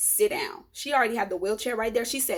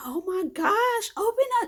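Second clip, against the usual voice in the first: mock-desperate, frantic, very high-pitched yelling; 11 semitones higher than usual. Retelling knocking on a locked door while about to give birth: retelling own yell. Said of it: "I'm like yelling".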